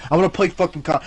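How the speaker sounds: normal talking voice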